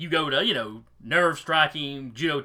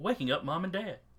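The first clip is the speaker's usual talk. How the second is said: phone virtual assistant voice; 4 semitones higher, 6 dB quieter than usual. Voicing the phone assistant answering the child's command: Siri voice. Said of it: "you hear a familiar, a familiar voice".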